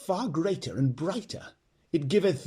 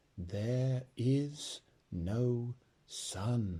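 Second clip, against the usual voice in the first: very slow, low, solemn and grave voice; 5 semitones lower, 9 dB quieter than usual. A witch repeats her words to Jill and the others, slow and grave. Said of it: "Slowly and gravely the witch repeated".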